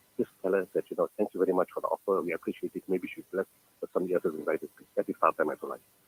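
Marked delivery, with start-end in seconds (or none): none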